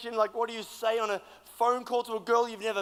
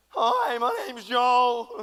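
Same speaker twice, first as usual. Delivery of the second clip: put-on very slow, loud, gawky teenage schoolboy voice; 5 dB louder than usual. Retelling talking to a girl on the phone: imitating a year nine boy voice. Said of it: "it's like you go to, like, year nine boy".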